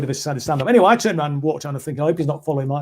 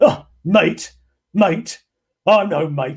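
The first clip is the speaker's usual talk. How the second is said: mock furious delivery, very slow and drawn out; 2 semitones higher than usual. Retelling a phone call with someone furious: imitating a furious man. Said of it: "he was absolutely bloody furious".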